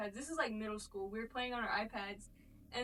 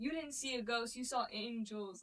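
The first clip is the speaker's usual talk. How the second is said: usual speaking voice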